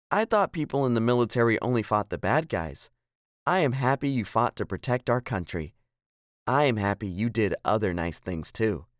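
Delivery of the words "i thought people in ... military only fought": usual speaking voice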